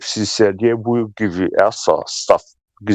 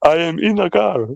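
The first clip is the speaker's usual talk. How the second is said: put-on mimicking voice, higher; 9 semitones higher than usual. Imitating how a caller said a line. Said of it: "I love the way he said that".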